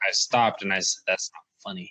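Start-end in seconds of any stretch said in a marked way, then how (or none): 1.1-1.9 play-acted, completely earnest, dead serious tone. Retelling a joke told to a girl: imitating own serious tone. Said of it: "real serious though".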